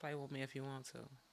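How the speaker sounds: whisper. Showing how she sometimes whispers to sound more aggressive, whispered. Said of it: "Sometimes I got to whisper".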